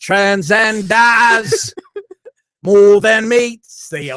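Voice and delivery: put-on English accent. Joking about a slogan, saying it in a put-on english accent. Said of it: "you gotta do it with the English accent".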